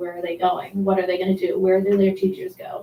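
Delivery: plain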